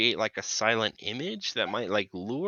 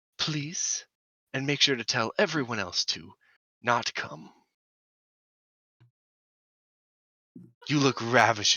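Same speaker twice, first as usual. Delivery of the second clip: theatrical stage whisper. Speaking in character to a woman through a door: stage whisper. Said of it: "whisper, like a stage whisper".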